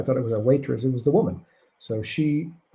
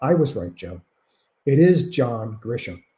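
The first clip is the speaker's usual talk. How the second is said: plain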